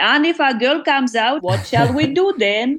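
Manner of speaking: put-on Ugandan accent. Telling how he replied to news of expecting a boy: specific Ugandan accent. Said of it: "replied with this absolutely specific Ugandan accent".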